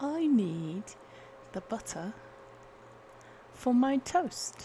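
put-on posh British accent. Trying out accents on one sentence, the speaker does a posh british accent. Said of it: "Posh British".

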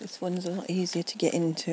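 ordinary talk, nothing marked

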